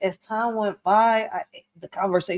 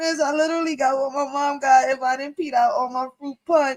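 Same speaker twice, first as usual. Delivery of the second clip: weepy, tearful crying, pitched up; 6 semitones higher than usual. Retelling a first period scare to a lady: retelling crying to a lady. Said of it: "I'm crying to this lady".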